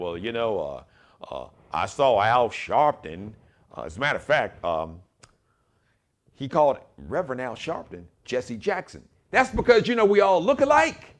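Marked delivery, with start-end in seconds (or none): 0.0-3.3 halting put-on southern drawl, full of uhs. Retelling a defense attorney's words in court: imitating a southern drawl. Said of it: "with his little southern drawl".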